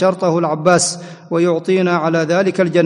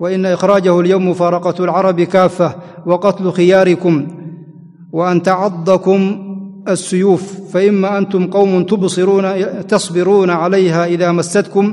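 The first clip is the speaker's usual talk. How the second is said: normal talking voice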